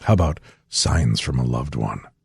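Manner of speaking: very low, hushed, creepy ghost-story voice. A podcast host introduces the next listener-story segment to his co-host, creepy tone. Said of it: "Why do you make it sound creepy?".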